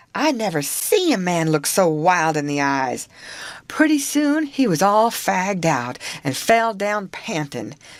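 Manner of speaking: ordinary delivery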